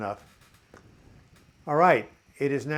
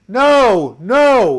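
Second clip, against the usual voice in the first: very loud, high-pitched yell. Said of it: "and yelling".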